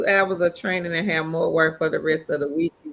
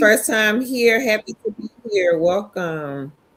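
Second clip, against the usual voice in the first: normal talking voice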